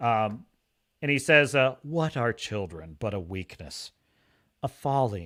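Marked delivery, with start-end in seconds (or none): 1.8-5.3 hushed, quiet, soft musing. Quoting a voiceover line by Larys from season one: quiet musing Larys voice. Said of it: "it's so quiet".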